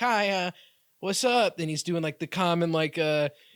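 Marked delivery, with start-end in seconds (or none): 0.0-1.6 slow, drawn-out, awkward voice. Retelling a movie scene where Vince Vaughn acts nerdy: imitating awkward Vince Vaughn. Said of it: "all awkward, like".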